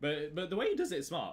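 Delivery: voice cracking. Talking about another trader's approach, voice cracking. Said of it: "voice crack there".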